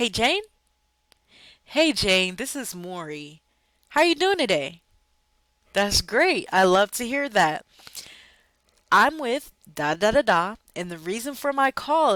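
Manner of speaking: bright, smiling sales phone voice, swooping pitch. Speaker demonstrates greeting jane on a phone call, smiling happy phone voice. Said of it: "you see how more happy that sounds".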